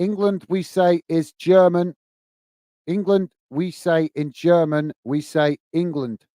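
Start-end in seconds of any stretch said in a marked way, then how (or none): none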